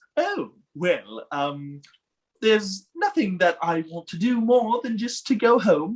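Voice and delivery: prissy, fussy, prim android butler voice. Speaker demonstrates the voice they used for Jorgen; Jorgen's C-3PO-like voice. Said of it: "it sounds like C-3PO".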